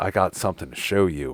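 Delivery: creepy, hushed, secretive male voice. Retelling waking from a drunken stupor with Robert over you; creepy Robert impression. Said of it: "creepy fucking Robert over top of you".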